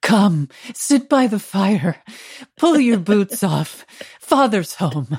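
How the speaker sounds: put-on olde-timey, old-fashioned 1800s-style speech. Showing how two people talk to each other at home: old-fashioned 1800s speech. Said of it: "We speak like the 1800s".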